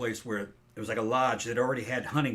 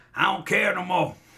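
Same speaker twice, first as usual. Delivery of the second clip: put-on very loud, high-pitched, very old man's voice; 8 semitones higher, 8 dB louder than usual. Doing his dad's voice as an old man: imitating his dad when very old. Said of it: "When he was real old, it was like".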